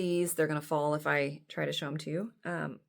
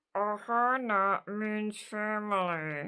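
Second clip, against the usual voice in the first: put-on gritted-teeth speech, higher; 5 semitones higher than usual. Retelling how the five-year-old says a line, imitating talking through clenched teeth. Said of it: "clenches her teeth together".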